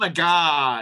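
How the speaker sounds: put-on slow valley girl voice. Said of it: "I didn't talk like that".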